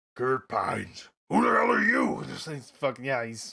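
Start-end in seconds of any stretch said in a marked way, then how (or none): 0.2-2.2 freaked-out, frantic, panicked, high, wildly swooping pitch. Trying out the pilot's voice again as he hears a strange voice: Pines voice. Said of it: "do I have his voice down?".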